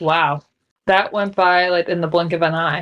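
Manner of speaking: normal talking voice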